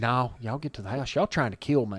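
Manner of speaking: almost whispering. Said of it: "he's almost whispering".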